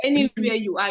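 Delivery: ordinary talk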